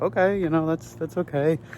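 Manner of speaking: mock reply, squeaky and pitched way up. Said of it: "And I was like".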